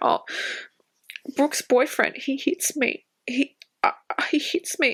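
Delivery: mock manipulative, pitiful, sob-story voice. Retelling what a girl said, imitating her sob story. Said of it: "starts telling a sob story".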